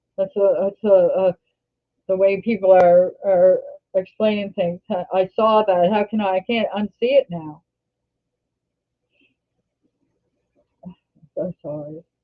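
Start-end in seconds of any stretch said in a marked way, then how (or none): 4.9-12.0 tearful, close to tears. Talking about a lost baby she can't stop seeing, teary. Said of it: "I don't know why I'm teary today".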